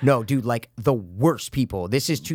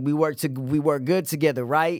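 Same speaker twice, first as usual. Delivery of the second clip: put-on fake tough-guy talk, pitched higher; 6 semitones higher than usual. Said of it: "I can't even do an impression, but he's just like".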